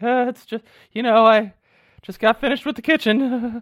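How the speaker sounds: very high, cracking, breaking voice. Retelling what she said on the mic, imitating her voice breaking. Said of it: "you can hear her like voice break".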